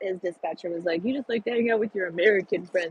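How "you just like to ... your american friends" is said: fast, dopey, put-on dumb-guy voice. Speaker quoting his dispatcher, in his dumb guy voice. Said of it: "that's my dumb guy voice".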